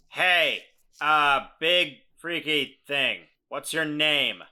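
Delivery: very loud, high-pitched, bellowing shout. Voicing a character who calls out to a monster: shouting out. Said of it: "he shouts out".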